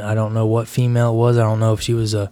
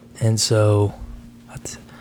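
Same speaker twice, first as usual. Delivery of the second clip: ordinary talk, nothing marked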